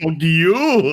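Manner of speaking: stress on the word you. Quoting a comeback line from a film, with stress on you. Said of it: "I put the inflection on the you".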